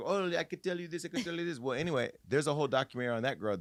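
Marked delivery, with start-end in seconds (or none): 0.0-1.6 put-on Jamaican accent, a bit high. Recalling a TV psychic commercial watched as a child: Miss Cleo Jamaican accent. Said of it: "with this Jamaican accent and she would say".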